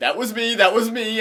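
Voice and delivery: put-on high, loud, panicked kid scream. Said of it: "ran out of the stall screaming".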